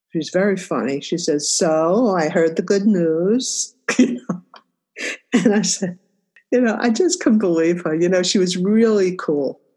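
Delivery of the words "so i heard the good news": put-on slow, heavy Yiddish-inflected accent.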